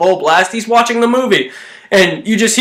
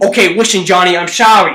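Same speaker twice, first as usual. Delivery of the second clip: put-on, fake, mock Boston accent; 2 semitones lower than usual. Riffing on a scene from Home Alone, as a guy addressing Johnny, put-on Boston accent. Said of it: "guy who sounds like he's from Boston".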